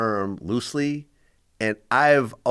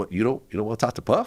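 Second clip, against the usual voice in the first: put-on surprised tone. Retelling a friend's reaction on the phone: imitating a surprised question. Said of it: "He, like, seemed surprised".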